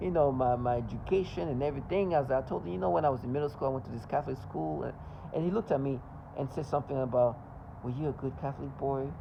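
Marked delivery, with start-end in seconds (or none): 7.8-9.1 imitated creepy tone, put-on creepy voice. Retelling what a man asked him, in a creepy voice. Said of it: "Very creepy voice".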